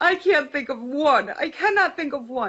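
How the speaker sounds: high-pitched, tearful, sobbing crying voice. Retelling what a friend said while crying on the phone: imitating someone crying. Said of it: "And as she's crying".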